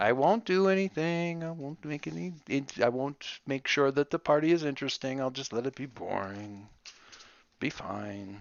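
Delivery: let down, deflated. A character answers after being told to go, disappointed. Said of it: "you sound so disappointed".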